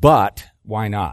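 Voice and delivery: but stressed hard, loud and slow.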